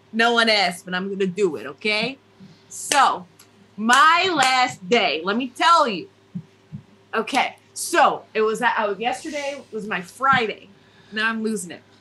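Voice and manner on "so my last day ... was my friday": put-on New Jersey accent. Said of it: "give me a Jersey accent".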